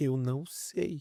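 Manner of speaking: put-on sobbing, words pushed out through crying. Retelling a child's words to a pastor: imitating someone crying. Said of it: "ela olhou pra mim chorando".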